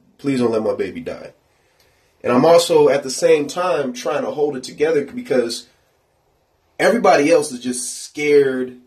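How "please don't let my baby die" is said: tearful, bawling, begging tone through tears. Retelling begging helpers during infant CPR: retelling a tearful plea. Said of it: "That was all I can say".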